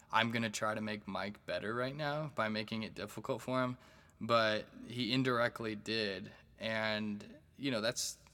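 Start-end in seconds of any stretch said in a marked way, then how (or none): none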